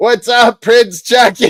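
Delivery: mock super loud call-out, very high. Telling a story about seeing Prince Charles pass by, retelling a loud yell. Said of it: "I yelled super loud".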